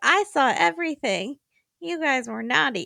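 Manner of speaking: tiny, high, little stuffed-toy panda voice. Retelling a guy doing voices for his stuffed panda, little stuffed-panda voice. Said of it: "doing little p- voices for the panda like".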